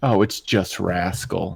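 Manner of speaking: disappointed, said slowly and drawn out. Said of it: "I sound really disappointed".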